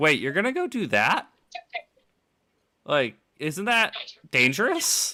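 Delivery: innocent voice with swooping, swinging pitch. Imagining an AI's reaction in the game: innocent Weapon voice. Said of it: "the weapon's so innocent".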